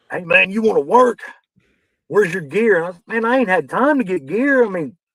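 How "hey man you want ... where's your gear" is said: acted-out big booming bellow. Retelling how a big man walked out and called to the speaker, retelling a bellowed call. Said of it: "He just bellows out".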